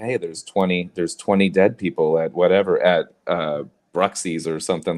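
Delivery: normal talking voice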